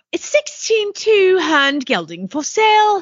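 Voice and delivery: terrible fake English accent. After claiming they can do it, reading a horse ad in a terrible English accent. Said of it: "I'm a terrible English accent".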